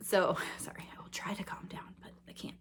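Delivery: excited hushed whisper.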